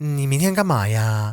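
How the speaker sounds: mock effeminate dainty girlish speech, final 'ah'. Describing how Shanghainese girls talk, imitating their dainty effeminate way of speaking. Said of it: "this very kind of, at the end there's always a ah".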